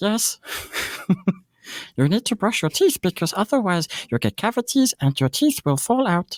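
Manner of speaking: acted raspy creature voice. Telling kids to brush their teeth: Stitch voice. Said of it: "I have Stitch".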